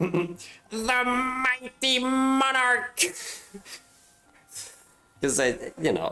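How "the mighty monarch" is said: mock voice, very high, pompous, grandiose, silly. Noticing something is called the Monarch, the speaker can't resist a put-on funny voice. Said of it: "doing a voice and going like".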